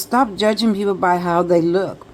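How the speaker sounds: ordinary talk, nothing marked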